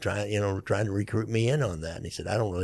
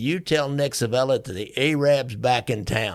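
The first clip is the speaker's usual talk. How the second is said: loud, full-throated, raised yell; 3 semitones higher, 4 dB louder than usual. Retelling a robber's threat while shooting into a trunk: imitating someone yelling. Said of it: "and he's yelling".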